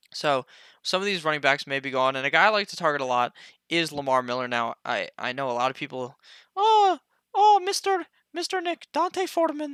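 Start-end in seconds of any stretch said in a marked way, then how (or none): 6.5-9.7 exaggerated thick Mexican accent, pitch way up. Discussing a player pick, the speaker voices people's reaction, in Consuelo Mexican accent. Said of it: "I just did a a Mexican accent there".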